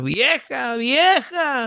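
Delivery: loud, high-pitched shouting. Telling a joke, the old man grabs a shovel and calls his wife, retelling a shout. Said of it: "agarra una pala y empieza a gritar".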